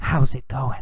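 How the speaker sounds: soft, hushed, breathy whisper. Explaining yell versus whisper to learners, demonstrating a whisper. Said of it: "Or did he whisper".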